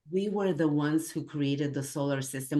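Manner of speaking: normal talking voice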